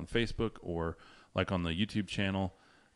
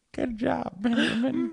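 put-on grandma voice, higher and louder; 6 dB louder than usual. Imitating the other speaker's proud grandma praising him: imitating a grandma. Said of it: "Your grandma's like".

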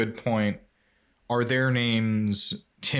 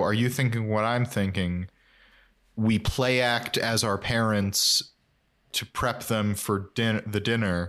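plain

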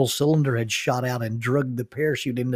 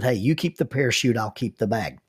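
ordinary delivery

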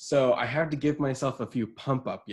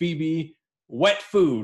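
loud screaming, carrying down the neighborhood; 4 semitones higher, 6 dB louder than usual. Retelling walking down the neighborhood calling for a pet, reenacting own screaming. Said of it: "I was just screaming down my neighborhood".

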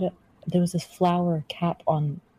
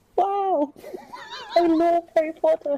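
poor fake British accent, very high pitch, swooping; 14 semitones higher than usual. Trying out a put-on accent: pathetic British accent. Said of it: "This is a pathetic accent".

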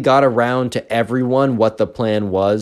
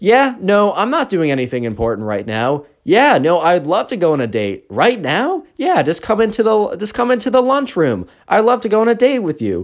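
play-acted, showy, loud talk with swooping pitch; 8 semitones higher than usual. Retelling a kid taking a phone call in the lunchroom, imitating loud talking. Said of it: "The Minecraft kid starts talking really loudly".

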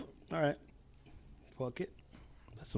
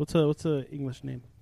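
ordinary delivery

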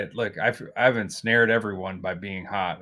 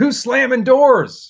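very loud, very high-pitched yell; 10 dB louder than usual. Recounting a scene where a man rounds the corner, retelling his shout. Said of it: "he just shouts".

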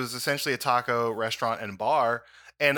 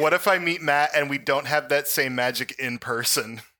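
normal talking voice

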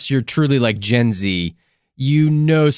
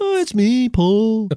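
pitched up and drawn out slowly; 9 semitones higher than usual. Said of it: "How's my [name]?".

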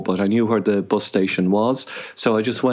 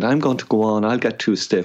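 put-on Boston accent. Retelling what a walking companion said before walking on: imitating Wanda's Boston accent. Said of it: "I shouldn't mimic somebody, but she said".

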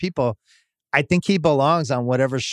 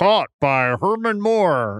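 canned video game computer announcer voice; 4 semitones higher than usual. Recalling the gimmick announcers in old football video games, do a computer announcer voice. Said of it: "this computer announcer who'd be like".

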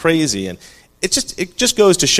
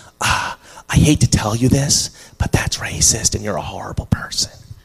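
acted-out, put-on whispering. Acting out a girl who comes over to object: imitating a whisper. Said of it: "some girl comes over and whispers".

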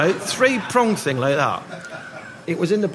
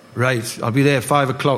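ordinary talk, nothing marked

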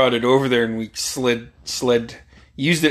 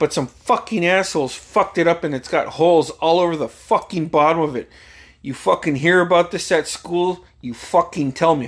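put-on furious, angry ranting, swearing a blue streak; 5 semitones higher than usual. Retelling a dad's angry warning at dinner: imitating angry dad. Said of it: "he was pissed".

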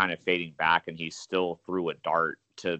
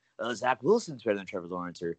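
mocking, tongue-in-cheek sports-pundit pronouncement; 4 semitones higher than usual. Mocking how ESPN analysts argue for other draft picks: imitating ESPN analysts. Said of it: "if you're watching E S P N right now, they'd be making the case".

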